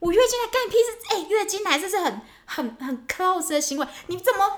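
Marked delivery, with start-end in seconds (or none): 0.0-0.9 mock heated, indignant, loud, raised angry voice. Retelling being questioned about drinking something cold, she acts out her reply, retelling an angry retort. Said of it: "你不要那么生气".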